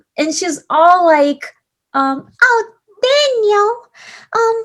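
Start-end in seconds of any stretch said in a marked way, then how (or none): 2.4-4.6 squeaked out, high and slow. Imitating a guy's high school girlfriend talking to Daniel, Minnie Mouse voice. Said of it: "with the Minnie Mouse voice".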